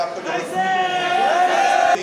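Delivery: high, slow, loud mock dismissive shout.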